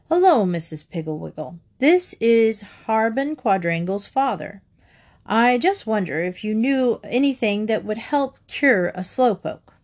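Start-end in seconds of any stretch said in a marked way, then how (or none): none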